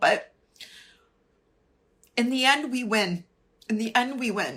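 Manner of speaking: emotional, choked-up voice catching. Speaker apologizes mid-speech, then carries on, getting emotional. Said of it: "I'm sorry I'm getting emotional".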